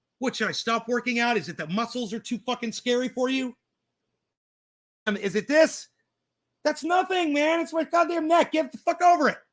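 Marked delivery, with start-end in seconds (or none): 6.6-9.4 loud yelling, pitched up. Speaker telling listeners to get over his neck vein, yelling. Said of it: "when I'm yelling at you".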